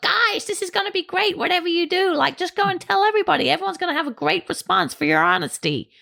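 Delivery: bad, very high, swooping put-on American accent. A podcast host mocking upbeat American podcasts in a bad American accent. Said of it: "American accent is getting better".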